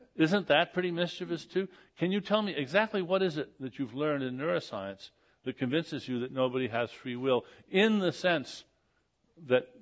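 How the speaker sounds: ordinary talk, nothing marked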